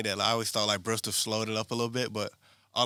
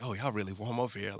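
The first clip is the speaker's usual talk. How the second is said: hushed half-whisper; 5 dB quieter than usual. Retelling what the speaker half-whispers to someone on the team, half-whispering. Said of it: "I'll still like whisper to like Pasquale".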